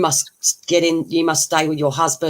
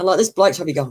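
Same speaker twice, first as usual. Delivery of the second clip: normal talking voice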